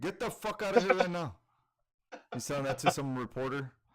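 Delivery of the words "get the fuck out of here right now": mock angry outburst at higher pitch. Retelling a video of Canelo snapping at a reporter: imitating angry Canelo. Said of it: "He got all pissed off at him".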